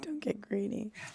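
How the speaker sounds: very soft, hushed voice. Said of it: "She said".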